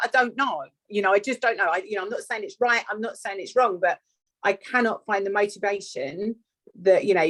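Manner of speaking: normal talking voice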